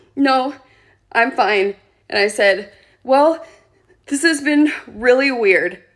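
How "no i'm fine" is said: mock sobbing, much higher, slower. Retelling how a man made the speaker cry, acting out the reply: imitating a sobbing reply. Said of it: "I'm sitting there sobbing".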